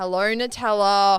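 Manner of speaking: loud, grudging, reluctant tone. Imitating someone greeting a dog she barely tolerates: imitating G's reluctant greeting voice. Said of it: "she's just got this voice where she's like".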